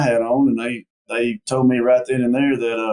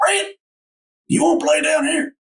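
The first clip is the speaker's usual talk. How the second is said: very high, scruffy little voice. Retelling a coach calling him over: imitating Joe Cons's scruffy voice. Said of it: "he got that little scruffy voice".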